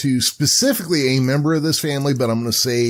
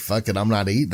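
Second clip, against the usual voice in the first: ordinary talk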